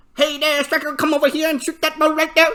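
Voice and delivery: put-on Vietnamese accent, high and loud. Retelling a talk about a Vietnamese team, the speaker imitates a Vietnamese accent. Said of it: "I'm just fucking imitating them".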